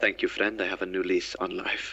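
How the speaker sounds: close, hushed, in-character whisper. Leaning close to a captured assassin's ear: whispering in character. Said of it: "did you go and whis-, whisper that to it?".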